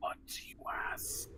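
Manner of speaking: dry, breathy, wispy near-whisper. Game master voicing a dead head raised with Speak with Dead, in a wispy, dry voice. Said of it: "in a wispy, dry voice".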